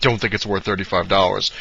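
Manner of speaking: normal talking voice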